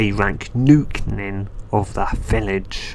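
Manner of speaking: ordinary talk, nothing marked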